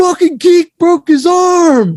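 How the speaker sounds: very high, shrill, drawn-out top-of-the-lungs scream. Retelling a taller kid in a crowded school hallway: imitating someone screaming. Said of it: "screams at the top of his lungs".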